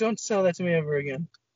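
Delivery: mock flat emotionless delivery. Retelling how an actor delivered a line: imitating a flat delivery. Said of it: "he said it like".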